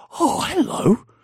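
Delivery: put-on baby talk voice, very high-pitched. Imitating a character's double take: imitating talking to a dog. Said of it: "it's like how I talk to a dog".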